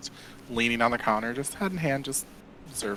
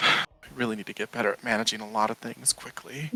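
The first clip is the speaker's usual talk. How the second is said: soft, private muttering under the breath. Voicing a character reacting to funds on the counter: muttering under her breath. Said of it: "just under her breath goes".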